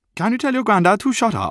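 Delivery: very high, squeaky, put-on Welsh accent. Speaker retelling what a penalty taker asked him, Welsh accent. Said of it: "That is how Welsh people talk".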